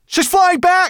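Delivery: very high-pitched exclamation. Narrator reading a character's line as the bird flies back, crying out. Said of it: "cried Ben".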